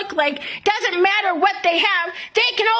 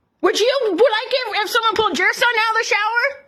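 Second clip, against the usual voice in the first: indignant, angry, heated, demanding tone; 2 semitones higher than usual. A parent refuses to pull their son out of the shower; screaming. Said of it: "Will you stop screaming?".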